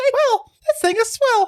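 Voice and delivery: very high, creepy cartoon mouse voice. Podcast co-host joining in on the other's voices, Mickey Mouse voice. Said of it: "That sounds so creepy".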